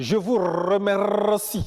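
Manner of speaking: French spoken with an Italian accent. Showing how an Italian speaks French, Italian accent in French. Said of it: "Un Italien dira par exemple".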